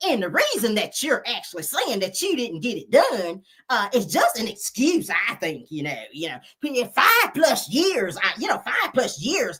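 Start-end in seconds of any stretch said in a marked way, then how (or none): 0.1-5.1 put-on, borrowed female voice. Quoting Kimmy's excuse in her own voice, Kimmy voice impression. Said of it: "let me say it in Kimmy's voice".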